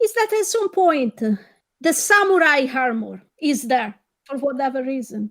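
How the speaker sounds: dry, sarcastic tone throughout. Describing a film scene that amazed them, in a sarcastic tone. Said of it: "please note the sarcasm in my voice".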